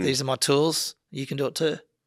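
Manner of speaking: plain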